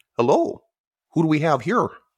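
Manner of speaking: put-on over-the-top Canadian accent. Retelling a stranger's greeting on a night hike, in an extremely Canadian accent. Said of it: "In the most Canadian accent that's ever Canadian".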